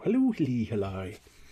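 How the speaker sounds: put-on Irish accent. Greeting someone with a hello: stereotyped put-on irish accent. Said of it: "No idea why I went Irish there".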